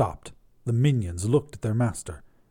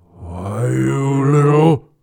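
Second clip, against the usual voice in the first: loud, raised demon voice; 8 dB louder than usual. Reading the story, the narrator voices Belial as his demon voice returns. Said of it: "the demon voice returning".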